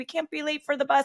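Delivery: high, panicked, hurried urging. Retelling a rushed morning before the bus: imitating her own panic. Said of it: "I just panicked because I was like".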